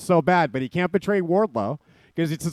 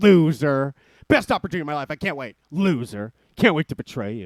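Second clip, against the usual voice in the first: put-on sarcastic voice, lower and slower; 3 semitones lower than usual. Describing MJF walking away while being sarcastic, mock-sarcastic MJF impression. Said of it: "he's being sarcastic, M J F. Like when he'd walk away and go".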